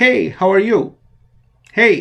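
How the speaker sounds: very loud, high, bright, lively, energetic delivery. Setting a recorder's level by speaking a test greeting: louder, energetic greeting. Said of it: "we habitually greet others with louder voice, with more energy".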